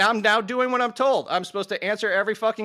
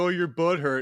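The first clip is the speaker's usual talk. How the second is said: mocking, put-on imitating tone; 3 semitones lower than usual. Mocking another speaker's accusation, retelling it: mocking imitation of the other speaker. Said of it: "with that kind of straw man, like".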